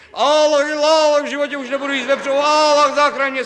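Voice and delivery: frantic, high-pitched, loud, fast wailing.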